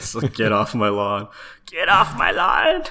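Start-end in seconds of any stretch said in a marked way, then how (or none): 1.7-2.8 put-on grumpy, loud, swooping old lady voice. Voicing what a sprite's idle animation seems to say: old woman voice. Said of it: "you sound like an old woman".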